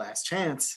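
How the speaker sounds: theatrical, in-character stage whisper. Tossing a body off a cliff in character, whispering. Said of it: "I'll whisper".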